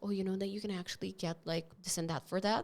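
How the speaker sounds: quick, hushed half-whisper, words rushed together. Retelling another employee pointing out their rights at work; imitating a coworker half-whispering. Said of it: "Why are you whispering?".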